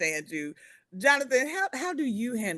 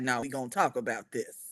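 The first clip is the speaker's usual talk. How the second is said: firm, serious, put-on no-nonsense voice; 6 semitones lower, 5 dB quieter than usual. Imitating how someone puts his voice on to insist on talking. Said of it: "he gotta put his voice on".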